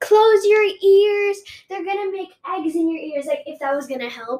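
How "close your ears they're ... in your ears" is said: high-pitched screaming. Retelling a scary moment, quoting a grandma: imitating a screaming grandma. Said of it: "my grandma was screaming".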